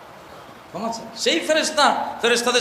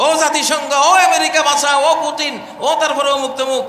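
high, loud, desperate screaming. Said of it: "রাব্বানা বলে চিৎকার দিবে".

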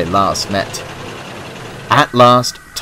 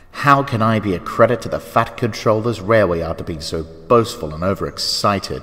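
ordinary delivery

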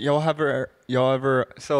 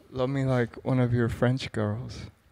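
ordinary talk, nothing marked

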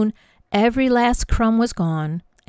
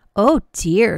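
sighed, louder; 4 dB louder than usual. Narrator reading a mother's reply to her daughter Jennie, sighing. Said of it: "sighed her mother".

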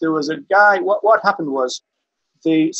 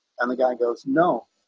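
normal talking voice

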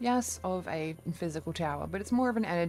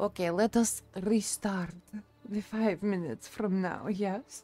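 put-on Russian-accented English; 2 semitones higher than usual. Performer restarting the scene after forgetting the accent, in a russian accent. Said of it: "I didn't forget the Russian accent".

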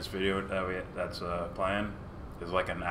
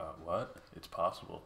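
put-on smug condescending voice, quieter; 8 dB quieter than usual. Imitating Rogan agreeing with a guest: condescending and smug. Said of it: "this condescending, like, smug way".

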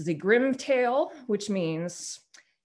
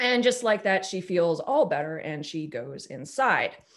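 ordinary talk, nothing marked

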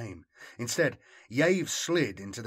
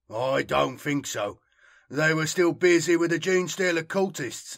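disgusted, raised and pitched up; 5 semitones higher, 6 dB louder than usual. Tulla answering the woman's question about the enemy, sounding disgusted. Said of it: "sounding disgusted".

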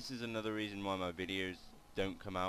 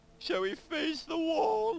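very high voice, cracking; 10 dB louder than usual. Speaker remarking on a big wall in the way, voice cracking. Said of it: "My voice just cracked".

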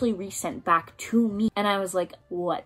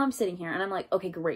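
usual speaking voice

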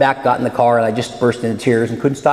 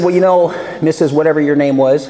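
plain

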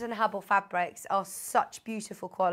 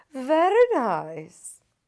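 nice, drawn-out, swooping sing-song tune; 3 semitones higher, 4 dB louder than usual. Presenting a pre-order bundle, quoting Paul to his face, very good Paul impression. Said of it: "That was a very good impression of you".

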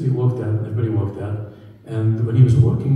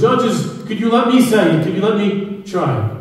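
put-on old man's broken English, much higher, slower; 10 semitones higher, 4 dB louder than usual. Retelling an old man in the audience asking the judges, very broken English. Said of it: "in a very broken English".

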